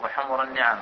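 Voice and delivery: normal talking voice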